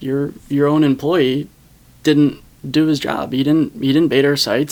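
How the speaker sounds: ordinary talk, nothing marked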